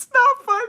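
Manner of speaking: very high-pitched, giggling and laughing through words. Telling a story and laughing at it while talking: laughing while talking. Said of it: "I don't know why I'm laughing".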